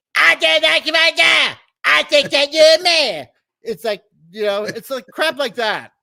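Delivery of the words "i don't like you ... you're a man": put-on cartoon kid voice, higher and louder. Doing an impression, retelling a past in the game: Cartman impression. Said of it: "That was a good Cartman impression".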